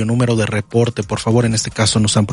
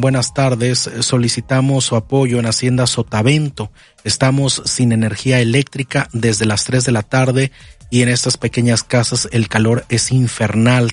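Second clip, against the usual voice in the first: normal talking voice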